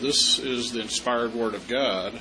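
plain

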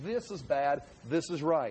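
ordinary talk

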